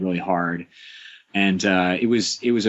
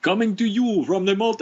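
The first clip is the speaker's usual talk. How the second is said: high-pitched, unconvincing mock Jamaican accent. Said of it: "I can't do Jamaican accent, but it's totally Jamaican".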